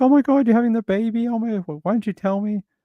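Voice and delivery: very high, fast, rushed squeal of surprise. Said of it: "I'm like".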